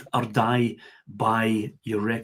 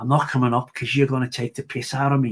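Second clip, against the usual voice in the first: put-on, imitated Scouse accent. Retelling what a man at the edge of the stage said, scouse accent impression. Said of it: "in his Scouse accent".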